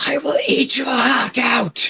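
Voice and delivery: very high, shrieking monster creature screech. Voicing the creature as its spike hits a player, screeching monster. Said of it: "as it screeches at you".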